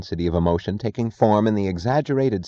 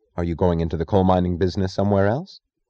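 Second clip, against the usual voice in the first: plain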